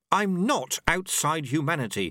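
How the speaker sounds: high, sharp, cutting delivery. Reading a novel: Susan cuts in on the other speaker, said sharply. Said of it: "said Susan sharply".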